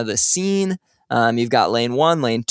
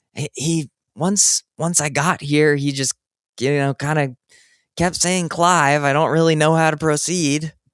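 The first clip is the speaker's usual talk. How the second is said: whispering, higher; 4 semitones higher than usual. Voicing a character inside a loon mascot costume: Ona whispering through mascot head. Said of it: "Ona kinda whispers through the, the loon costume".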